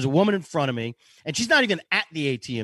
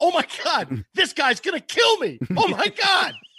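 very high, swooping, drawn-out, put-on terrified woman voice; 11 semitones higher than usual. Retelling chasing a woman down the street, imitating a terrified woman. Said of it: "She's terrified of me".

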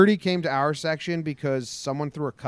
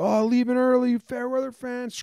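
put-on rowdy, high-pitched, drunken screaming yell; 9 semitones higher than usual. Retelling how a drunk fan at a ball game screamed at others: imitating a drunk fan screaming. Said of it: "screaming, screaming at him".

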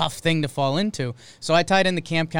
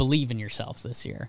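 low, earnest, serious-toned delivery; 5 semitones lower, 5 dB quieter than usual. Retelling what the manager told the players: imitating Brandon Hyde's serious tone. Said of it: "tell those guys in a serious tone".

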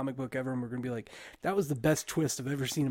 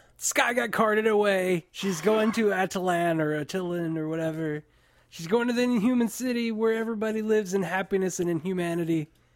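high, loud, excited all-out yelling, packed with words; 6 semitones higher, 6 dB louder than usual. A show host starts the spoiler section, yelling. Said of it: "That was a lot to yell".

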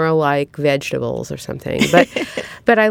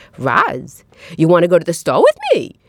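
put-on Brooklyn accent with sing-song tune. Speaker recalls a friend from their building, imitating her brooklyn accent. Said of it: "because of her accent".

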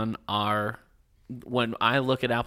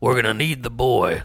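loud, creepy villain voice; 5 dB louder than usual. Telling another speaker they sound like the Lost villain, then a Lost villain impression. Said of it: "Now you just sound like the bad guy from Lost".

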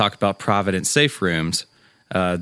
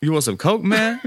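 mock-casual nonchalant tone, higher; 12 semitones higher than usual. Retelling how someone offered them coke: imitating a nonchalant dealer. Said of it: "so nonchalant about it".

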